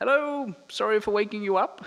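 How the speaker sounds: loud put-on British accent, pitched way up. Retelling getting out of the car to speak to someone: put-on British accent. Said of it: "put on my um, best British accent and said".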